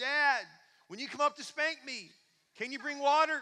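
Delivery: put-on high, loud, cheeky little boy voice.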